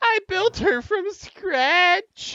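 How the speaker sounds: very high, very loud crying wail. Voicing a character who falls to his knees after his house burns: crying. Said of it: "he just falls down on his knees, crying, saying".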